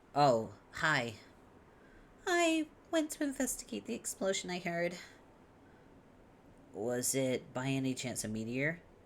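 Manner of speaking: high-pitched, sing-song cutesy uwu character voice. Voicing a character after being asked for a cutesy uwu voice: high-pitched cutesy voice. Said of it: "I hate doing her voice so high".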